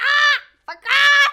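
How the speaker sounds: very loud, shrill, squawking parrot voice. Speaker repeats what they said to people who aren't friends, sounding like a bird. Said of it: "I sounded like a bird".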